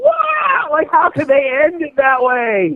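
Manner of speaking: mock very high, sing-song, swooping child shriek. Retelling watching the second movie as a kid: imitating own past screaming. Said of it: "I was, like, screaming".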